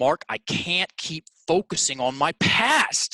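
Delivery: high, heartfelt, insistent, emphatic emotional voice. Retelling what a stuck young man told him in a one-on-one session, emphatic and emotional. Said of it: "he says very emphatically, very emotionally".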